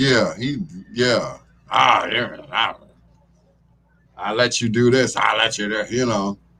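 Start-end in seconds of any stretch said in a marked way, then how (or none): 1.7-5.8 put-on mean drunk voice. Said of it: "the mean drunk".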